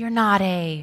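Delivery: shaky, trembling voice. Reading a story aloud, Susan asks Aslan a question in a shaky voice. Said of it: "asked Susan in a shaky voice".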